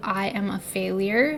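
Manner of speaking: ordinary talk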